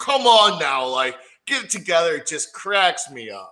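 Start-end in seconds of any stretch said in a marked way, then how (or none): 0.0-2.1 loud, high yelling with a scolding tone. Retelling a blooper of him yelling at the wrestlers: imitating Mean Gene yelling. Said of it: "when he's yelling at the wrestlers".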